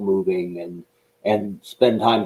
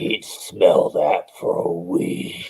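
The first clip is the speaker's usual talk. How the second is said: put-on gravelly drill sergeant voice. Retelling what Sergeant Slaughter said on stage: Sergeant Slaughter's gravelly voice. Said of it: "it was Sarge's gravelly voice".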